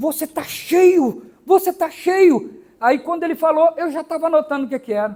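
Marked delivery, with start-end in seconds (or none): 0.0-2.6 put-on scared, startled man, slow delivery. Retelling what the man at the car agency said: imitating a frightened man. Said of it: "assustado com aquela cara".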